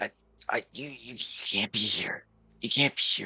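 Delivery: high, halting, stumbling whisper. Game master voicing the man the players came to save, whispering back. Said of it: "he whispers back to you guys".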